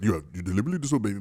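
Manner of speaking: voice dropped very low. Asked to say it in the Simba voice, doing a low James Earl Jones voice. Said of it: "I have to get low to do it".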